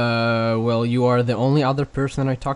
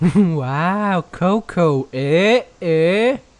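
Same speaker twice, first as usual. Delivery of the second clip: put-on toy voice, higher and louder; 6 semitones higher, 5 dB louder than usual. Near the end of a show's last episode, a host does a Furby toy impression. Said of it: "That's my Furby impression".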